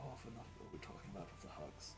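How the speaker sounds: soft, hushed, secretive whisper. Voicing Hans leaning in to speak into someone's ear: Hans whispering. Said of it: "leans in and whispers into your ear".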